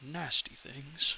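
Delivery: muttered quietly under the breath. A character sees a guard shoot an imp out of the sky: muttered under breath. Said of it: "He mutters under his breath".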